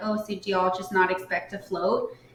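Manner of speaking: ordinary talk, nothing marked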